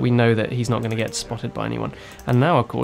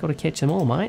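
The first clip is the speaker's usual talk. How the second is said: bad, terrible, fake put-on Australian accent; 4 semitones higher than usual. A short joke aside before apologizing: terrible Aussie accent. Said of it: "I'll stop with the terrible Aussie accent now".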